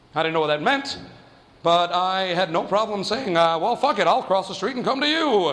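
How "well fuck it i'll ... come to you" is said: ordinary delivery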